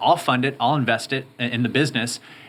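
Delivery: ordinary delivery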